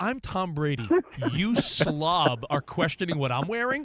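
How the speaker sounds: slow, haughty, condescending drawl, play-acted. Retelling an athlete's reply to a reporter: imitating Tom Brady's condescending tone. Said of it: "That's what I feel like Eileen Gu was sounding like".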